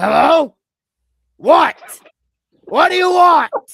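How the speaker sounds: high, loud, drawn-out yell. Doing an impression of Brock, who yells a lot, answering the phone. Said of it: "this is my impersonation".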